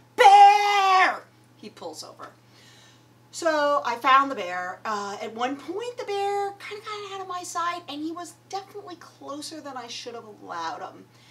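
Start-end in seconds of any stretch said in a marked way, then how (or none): 0.2-1.2 very loud, high, stretched-out shriek. Retelling spotting a bear from the passenger seat: imitating herself screaming.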